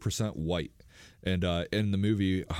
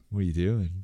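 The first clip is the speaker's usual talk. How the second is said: creepy, prying put-on phone voice. Retelling how they talk when answering a phone call: imitating a creepy voice. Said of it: "I get real creepy and I go".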